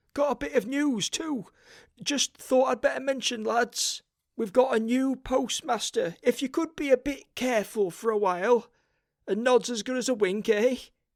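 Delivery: anxious, nervous, very high-pitched. Reading a story, a man come about the rent tells the lads some news, nervous. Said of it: "he said. / said [name] nervously".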